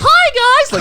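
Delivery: put-on very high squeaky kid voice, "hi" drawn out. Retelling how he sounded at five: imitating his squeaky child voice. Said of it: "a fucking squeaker voice when I was, like, five years old".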